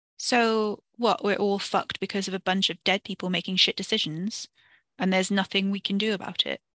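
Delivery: ordinary delivery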